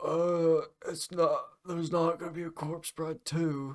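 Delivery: sad, weepy, high, tearful voice. Retelling a man's answer to their question about a sequel, mock-tearful retelling. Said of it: "a tear rolled down his cheek".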